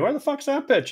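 mock screaming at a very high pitch. Retelling a spring training story: imitating Tom Kelly screaming. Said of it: "Tom Kelly screaming at me".

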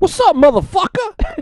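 very high-pitched put-on voice. Pretending to be Brendan to start the show: Brendan impression. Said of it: "I'll be Brendan".

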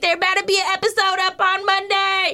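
pushy, demanding, high-pitched scream. A woman in her car at the airport yells at the speaker; retelling a woman screaming. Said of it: "starts screaming at me".

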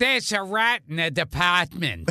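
put-on regional New England accent. Asked whether they do one, the speaker delivers a line in a new england accent. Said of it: "Do you do a New England accent?".

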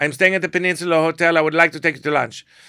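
put-on speaking with Middle Eastern accent. Retelling a man's phone call to a woman, thick Middle Eastern accent. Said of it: "he has a very thick Middle Eastern accent".

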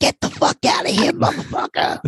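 raspy, throaty voice. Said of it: "This is my imitation of [name]".

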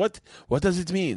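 put-on thick, heavy Russian accent, very high pitch. Retelling what Isla asked about the shirt, imitating Isla with a very Russian accent. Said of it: "Very, very Russian accent".

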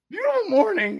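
nervous, very high, loud voice crack. Retelling a nervous greeting while walking to the lift, reenacting a nervous voice crack. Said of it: "My voice cracks".

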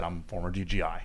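ordinary delivery

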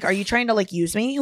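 ordinary talk

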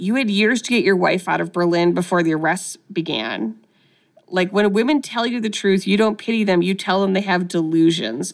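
usual speaking voice

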